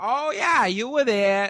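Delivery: accusatory Boston tough guy.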